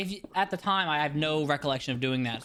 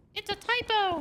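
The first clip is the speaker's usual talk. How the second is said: put-on very high little kid voice. Retelling pausing onstage at a school assembly: little fourth grader voice. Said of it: "in my little fourth grader voice".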